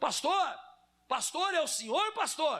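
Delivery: put-on shout. Retelling a barber calling across the street to the pastor: imitating a shout. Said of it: "Aí ele gritou".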